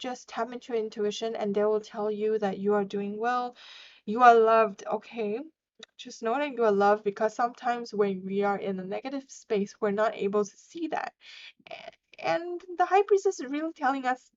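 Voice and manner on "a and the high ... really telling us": moved, emotional voice with pitch raised. Explaining what the high priestess is telling us, emotional. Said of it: "now I'm like being emotional about this".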